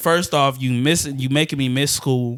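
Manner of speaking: ordinary talk, nothing marked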